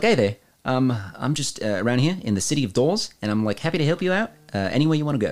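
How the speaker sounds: put-on New Zealand accent character voice. Describing a praying-mantis character from their campaign, in a New Zealand accent. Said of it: "He was a New Zealand Claw Man".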